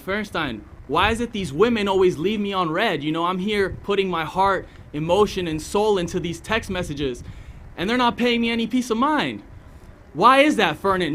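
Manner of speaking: exasperated, pleading delivery.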